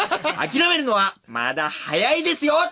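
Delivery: put-on bright, energetic, high, lively young businessman voice. Retelling a line spoken in a nice voice: lively young entrepreneur voice. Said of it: "結構いい声で、なんか、なんだろう、元気な青年実業家みたいな声で".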